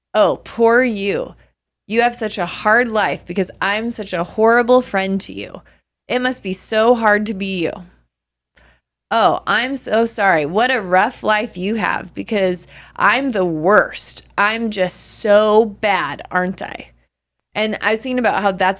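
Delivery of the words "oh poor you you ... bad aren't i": heavy, laid-on-thick sarcasm, slow and drawn-out. Retelling how people once answered hurt feelings: imitating a sarcastic reply.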